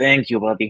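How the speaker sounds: mumbled quietly to himself. Voicing a character thanking someone while stomping along: mumbling to himself. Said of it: "mumble to himself a little bit".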